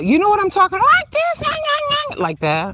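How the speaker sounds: very high, swooping, grating nails-on-chalkboard voice. Describing a kind of voice that bothers them, demonstrating a high-pitched voice. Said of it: "You know that high pitched voice".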